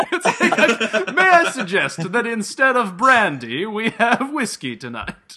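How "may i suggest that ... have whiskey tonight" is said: loud, terrible, bad put-on Italian accent. Speaker acting out a character's line, in a terrible italian accent. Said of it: "I will try to do it in the terrible Italian accent".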